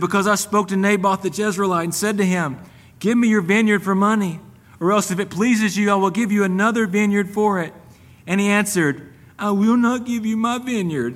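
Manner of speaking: mock whiny voice. Retelling verse 6, where he answers her, in a mock-whining voice. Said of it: "in the most whining voice you could ever imagine".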